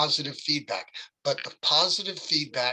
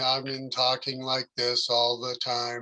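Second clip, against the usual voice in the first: put-on droning teacher voice, lower; 3 semitones lower than usual. Critiquing someone's speech, comparing their delivery to a movie teacher: Ferris Bueller teacher monotone. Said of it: "your vocal variety made you sound like that teacher".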